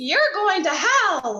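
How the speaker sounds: high, swooping, annoying sing-song, "hell" drawn out. Retelling what a lady said to a tattooed stranger: imitating an annoying lady's voice. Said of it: "with that annoying voice".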